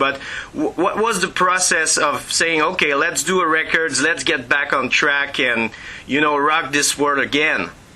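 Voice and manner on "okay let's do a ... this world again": ordinary talk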